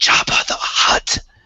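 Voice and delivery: exaggerated loud stage whisper meant to carry. Narrating the game, a character answers while Orpa glares at him: loud stage whisper. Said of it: "he does like the loud whisper".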